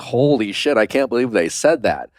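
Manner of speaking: ordinary talk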